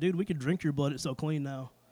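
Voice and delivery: ordinary talk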